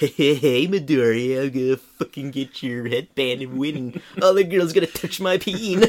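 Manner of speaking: high-pitched, creepy, sneaky character voice. Recapping an anime scene, voicing Mineta peeking out from under wings: Mineta impression. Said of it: "creepily peeking out from under Shoji's wings, going like".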